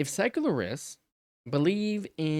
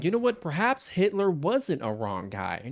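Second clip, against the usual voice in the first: mock hedging tone with raised pitch. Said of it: "people saying".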